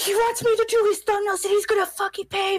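panicked excited outburst. Retelling running up to mom with big news: imitating own past freaking out. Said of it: "I was sitting there freaking out".

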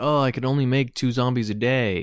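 normal talking voice

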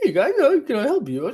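piercing, super high, shrill, loud squeak. Retelling how the waiter greeted their table, imitating his super-high voice. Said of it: "his voice is going super high".

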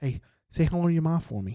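put-on, laid-on Boston accent. Talking about Mark Wahlberg with a co-host, the speaker slips into a Mark Wahlberg Boston accent. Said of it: "Going Boston accent?".

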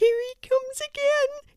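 whispering. Reading the mouse's line as it hides behind Larry's ear: whispered. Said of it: "he whispered".

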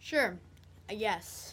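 not very excited. Asked by Ella if he is excited about Christmas, [name] answers, not very excited. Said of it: "You don't sound very excited".

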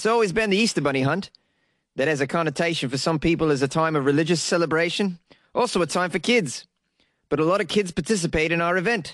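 bad, fake, put-on New Zealand accent. Quoting someone talking about their yearly event, in a put-on New Zealand accent. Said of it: "Is that a pretty good New Zealand accent?".

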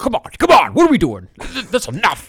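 very high, shrill, swooping, exasperated sports host voice. Retelling how an upset sports show host reacted: imitating Greg Sharp. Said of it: "You sound just like him".

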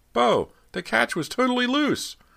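very high, loud, alarm-choked cry. Narrator reads Ernie calling out to Beau, voice choked with alarm. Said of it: "his voice choked with alarm".

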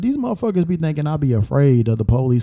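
normal talking voice

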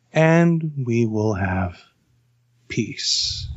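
very slow, drawn-out, emperor-like pronouncement. Quoting the next part of the line: soft Palpatine voice. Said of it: "he goes super soft".

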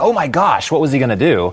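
ordinary talk

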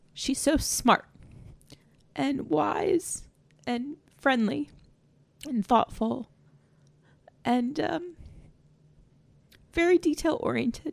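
emotional, touched, moved voice full of feeling. Speaking about a supervisor she used to have, getting emotional. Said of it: "I don't know why I'm getting emotional".

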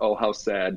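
normal talking voice

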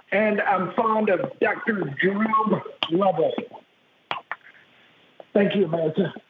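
formal presidential address cadence, like a national speech. Playing a fake clip of a State of the Union speech: George W. Bush impression. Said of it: "George W. Bush doing an impersonation of".

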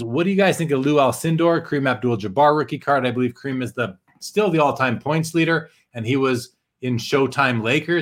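ordinary talk, nothing marked

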